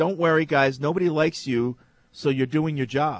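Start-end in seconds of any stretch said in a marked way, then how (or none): none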